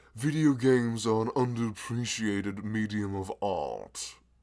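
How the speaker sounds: loud, very slow, grandly enunciated fancy voice. Stating a claim about video games as art, fancy put-on voice. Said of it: "let me do the fancy voice to properly enunciate this".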